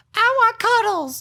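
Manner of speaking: put-on unrealistic, very high girly voice. Mocking how guys imitate women: imitating a really high girl voice. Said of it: "really high, like".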